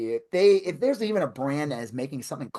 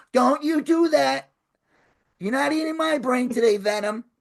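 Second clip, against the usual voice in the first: put-on old man voice, much higher and slower; 11 semitones higher, 4 dB louder than usual.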